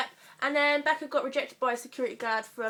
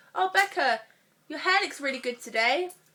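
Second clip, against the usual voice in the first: heavy, put-on sarcasm, clearly insincere; 4 semitones higher, 4 dB louder than usual. Showing what the sarcastic thumb goes with: put-on sarcastic compliment. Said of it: "Sarcastic thumb".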